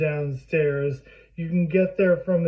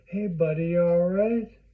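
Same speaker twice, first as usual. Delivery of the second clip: put-on cool, calm, relaxed tone. A father retells greeting his child in the hallway at night, retelling a put-on cool calm. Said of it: "I'm trying to keep it cool".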